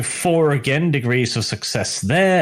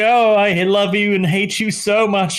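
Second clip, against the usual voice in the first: crying through the words, high and tearful; 7 semitones higher than usual. Voicing a character who throws things, then starts crying: crying. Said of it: "she begins crying like".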